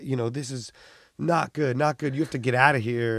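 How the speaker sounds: angry, furious, scolding rant. Retelling how an airport worker confronted the filming: imitating an angry person. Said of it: "got so mad".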